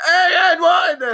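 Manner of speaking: very high-pitched, loud, screaming shout. Describing how Westbrook yells at the referee on drives, imitating Westbrook screaming at ref. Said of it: "And he's just screaming at the ref".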